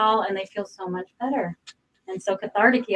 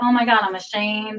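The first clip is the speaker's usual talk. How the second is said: ordinary delivery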